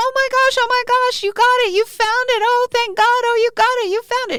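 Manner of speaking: shrill, very high-pitched, loud woman's shouting. Retelling how a woman in a passing truck yelled as the speaker picked up money; imitating a woman yelling. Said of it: "this woman's voice yells".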